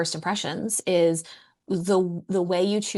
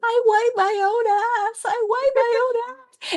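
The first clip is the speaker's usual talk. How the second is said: mock, very high, desperate screaming child's shriek; 4 dB louder than usual. Describing a scene where a kid is being taken away, imitating a kid screaming. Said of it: "he's screaming".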